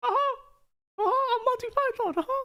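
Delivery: tiny, very high cartoon mouse voice. Voicing a toy python named Monty: Mickey Mouse voice. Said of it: "I have a Mickey Mouse voice".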